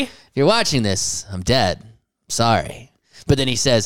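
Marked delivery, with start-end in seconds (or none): none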